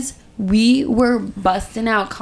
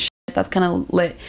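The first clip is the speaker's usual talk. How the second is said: plain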